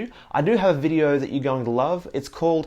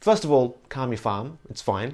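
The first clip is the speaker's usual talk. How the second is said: ordinary talk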